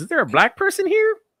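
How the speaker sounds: very high comic voice, wide sing-song pitch.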